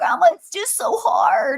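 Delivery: whiny, sing-song, high, drawn-out whine. Retelling what a granddaughter says when it's hard: imitating Haven whining. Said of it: "she can kinda whine a little bit".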